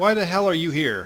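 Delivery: high dwarf voice. Narrating a scene, voicing a dwarf who looks down at you, dwarf character voice. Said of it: "he looks down at you and says".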